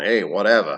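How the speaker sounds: Brooklyn New York accent. Showing one last accent for playing characters: brooklyn accent. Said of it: "one last accent, I guess, would be, uh, Brooklyn".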